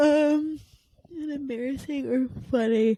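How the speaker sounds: words stretched by a yawn. Late at night, speaker reads out a question prompt, yawning while talking. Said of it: "Sorry, I'm yawning".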